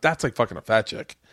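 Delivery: ordinary delivery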